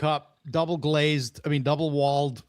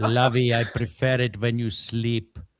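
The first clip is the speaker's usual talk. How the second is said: fake Indian accent, lower pitch; 3 semitones lower than usual. Speaking to Mazzy when another speaker asks: put-on Indian accent. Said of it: "Is that like an Indian Thurston Howell?".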